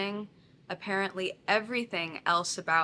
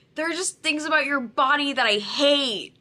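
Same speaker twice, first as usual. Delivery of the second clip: put-on very loud, shrill raised voice; 8 semitones higher, 9 dB louder than usual. Retelling a partner's words during a breakup: imitating someone raising their voice.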